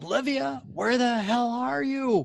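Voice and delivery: shrill, very high shout from a woman. Narrating a scene, voicing a woman calling from the porch: woman shouting. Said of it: "this woman's voice shouting".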